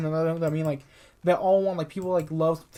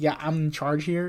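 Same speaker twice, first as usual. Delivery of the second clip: mock arrogant, egotistical tone. Retelling a tv scene where a cop bosses everyone: imitating an egotistical cop. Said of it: "egotistical ass".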